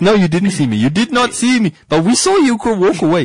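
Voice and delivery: high, panicky, guilty pleading voice.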